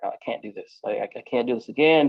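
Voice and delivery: put-on crying. Recounting begging a woman for a book instead of pills, retelling crying. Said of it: "I'm crying".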